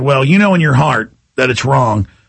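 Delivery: ordinary delivery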